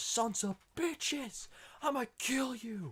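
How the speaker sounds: mock, very high, drawn-out, full-lung scream. Retelling how a man with a shotgun yelled in the street: imitating a man screaming. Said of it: "Just screaming out of".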